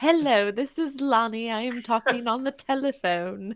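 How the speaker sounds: put-on British accent. Voicing Lonnie speaking over a sending stone: British accent as Lonnie. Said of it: "I love that Lonnie's British".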